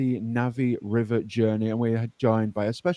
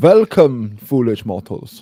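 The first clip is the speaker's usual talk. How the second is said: booming, loud German accent; 10 dB louder than usual. Greeting everyone at the start: Haunted Mansion ghost host, German accent. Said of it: "why are you being the Haunted Mansion ghost host, but German?".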